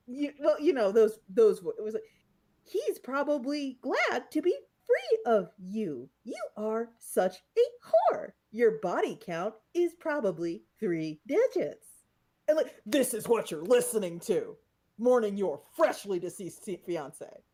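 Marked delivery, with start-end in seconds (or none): 2.6-11.8 put-on robot voice, slow and sing-song. Imitating abusive text-to-speech messages read on a stream: put-on robot voice. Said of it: "that robot voice saying things like".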